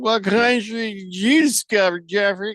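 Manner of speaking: put-on slurred as if drunk. Reading someone's voice-to-text message aloud as if he's drunk, slurring. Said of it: "let me read it as if he's drunk".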